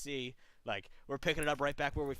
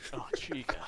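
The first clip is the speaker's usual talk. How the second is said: voice dropped into bass. Going on with the Markiplier bit: deep Markiplier voice. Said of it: "just that fucking deep shit".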